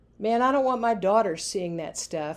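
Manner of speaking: ordinary delivery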